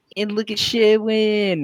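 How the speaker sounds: very slow, grand, high, drawn-out hyped delivery. Voicing a character presenting the group in the streets: cheering, hyped Solomon. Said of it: "cheering up".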